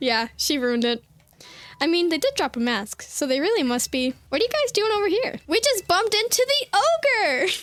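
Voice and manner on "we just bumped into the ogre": sudden high stretched yell. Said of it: "Why are you yelling all of a sudden?".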